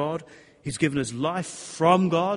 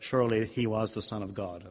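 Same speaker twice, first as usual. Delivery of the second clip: rather flat, level, slow delivery; 6 semitones lower, 4 dB quieter than usual. Retelling how an actor said a film line: flat John Wayne line delivery. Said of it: "delivered the line in a sort of rather flat way".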